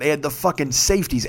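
ordinary delivery

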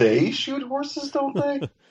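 very high-pitched, incredulous tone. Showing how a movie title question should be asked, incredulous.

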